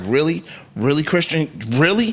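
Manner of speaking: ordinary talk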